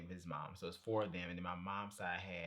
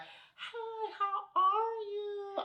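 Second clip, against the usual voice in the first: shrill, booming, very high, loud put-on polite voice; 9 dB louder than usual. Complaining about how she greets people on the set, imitating how she talks. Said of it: "she talks like this".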